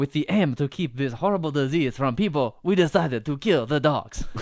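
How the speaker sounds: put-on Chinese accent in English. Retelling what a government official said, in a put-on Chinese accent. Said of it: "That's a great Chinese accent".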